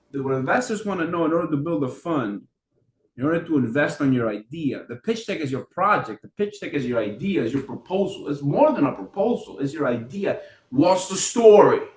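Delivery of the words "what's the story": put-on loud, raised New York accent. While explaining pitch decks, the speaker asks a question: New York accent. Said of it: "what's the story with an accent? From New York".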